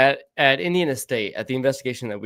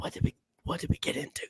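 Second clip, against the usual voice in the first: very quiet, barely audible whispered aside. Retelling a moment out in the woods: imitating own whisper. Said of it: "then I whispered to".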